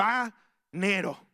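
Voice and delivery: put-on commanding, exacting, authoritative, insistent, bossy tone. Father retelling what his son says every Sunday: imitating Ivancito's demanding voice. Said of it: "con esa voz de autoridad y de exigencia".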